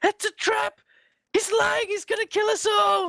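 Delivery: frantic hysterical panic, very high pitch. Narrating a tabletop game, the game master voices what the players hear: hysterical. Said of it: "You hear hysterical".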